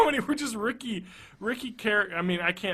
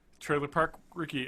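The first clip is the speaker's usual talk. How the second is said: ordinary delivery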